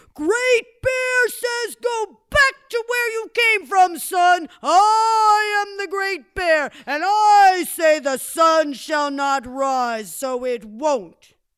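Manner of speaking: very loud, booming, furious high scream. Telling a story, great bear stands up and screams: furious scream. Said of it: "He stood up and he screamed".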